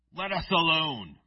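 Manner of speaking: guttural, snarling, growled demonic shout. Storyteller voicing the demon shouting at Jesus in the synagogue, guttural demonic shout. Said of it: "That's my best guttural voice".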